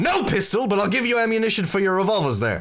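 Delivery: very high, loud, boisterous voice. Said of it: "It's just very boisterous".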